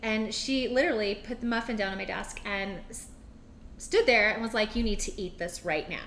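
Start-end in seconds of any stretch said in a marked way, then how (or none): 4.7-6.1 mock-serious, unjoking tone, lower pitch. Retelling what a woman said after putting a muffin on the desk: mock-serious, not lighthearted. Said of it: "the way she said it and the way she was acting really wasn't".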